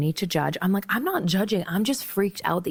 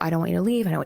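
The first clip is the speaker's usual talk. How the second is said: mock breakdown, pleading, faster. Retelling a man's reaction when the speaker tried to go, imitating someone breaking down. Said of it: "He starts breaking down".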